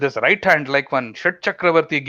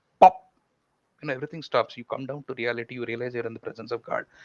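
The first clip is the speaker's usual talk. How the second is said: usual speaking voice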